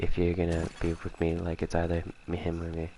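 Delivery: ordinary talk, nothing marked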